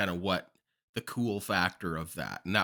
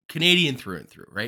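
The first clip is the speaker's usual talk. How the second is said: very loud, mocking, heavy sarcasm; 4 semitones higher, 9 dB louder than usual. Commenting on a player's loyalty to his home country: sarcastic. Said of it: "I say that with full sarcasm".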